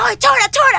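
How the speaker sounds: high-pitched loud shout.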